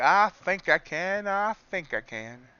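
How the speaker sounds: put-on high, slow, weird old-fashioned Southern drawl. Speaker gives a voice to the stalling candle: weird old-timey Southern accent. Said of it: "in that like weird old timey Southern accent".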